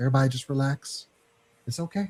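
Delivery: soft, gentle, reassuring, soothing radio-announcer voice. Telling everybody to relax after upsetting announcements, in an NPR voice. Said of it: "in my N P R voice".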